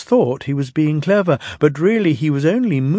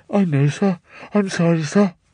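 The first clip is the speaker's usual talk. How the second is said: smothered, muffled, as if through leaves. A disgraced engine answers the one scolding him, in a muffled voice. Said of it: "Thomas's voice was muffled behind his bush".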